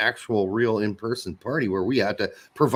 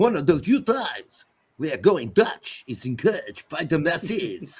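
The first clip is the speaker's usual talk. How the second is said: put-on French accent, higher pitch; 7 semitones higher than usual. Reading out a listener's message as a joke: put-on french accent. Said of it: "That's my best French impersonation".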